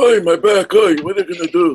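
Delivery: put-on whiny, very high elderly man voice.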